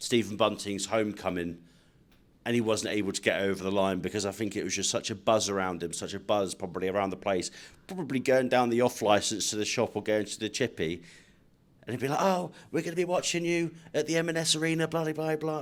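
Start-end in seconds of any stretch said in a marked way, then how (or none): 12.2-15.6 bad put-on Scouse accent, pitched up. Speaker imitates a local fan encouraging a returning player, bad scouse accent. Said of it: "That's not a very good Scouse accent".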